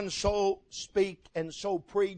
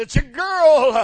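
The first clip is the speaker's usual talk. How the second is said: put-on very loud, overjoyed, joyful, drawn-out "girl"; 6 semitones higher, 13 dB louder than usual. Telling a story, acting out a nurse announcing the baby: imitating a joyful nurse. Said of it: "she says with a joy in her voice".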